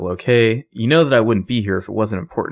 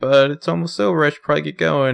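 put-on nice good-girl voice, a touch higher; 6 semitones higher than usual. Retelling a TV scene where Spencer reverts to good girl: imitating good-girl Spencer. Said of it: "revert to good girl Spencer".

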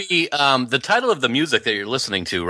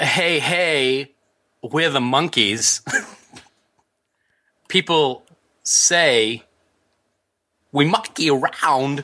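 put-on halting celebrity voice. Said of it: "doing it in my head as [name]".

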